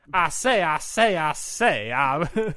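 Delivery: booming, slow, drawn-out call swooping up high. You act out Samoa Joe talking after beating A J Styles, in a Foghorn Leghorn voice. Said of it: "like he's Foghorn Leghorn all of a sudden".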